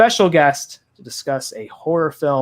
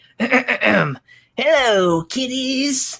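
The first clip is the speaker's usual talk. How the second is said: ghoul host voice, pitched way up; 11 semitones higher than usual. Horror podcast host greets listeners at the show's opening, Crypt Keeper voice. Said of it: "I never really tried a Crypt Keeper before".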